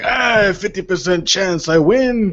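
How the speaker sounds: put-on slow, drawling, gravelly voice with Cuban accent. Imitating a fighter's fifty percent claim: Yoel Romero gravelly Cuban accent. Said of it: "in his gravelly ass Cuban accent".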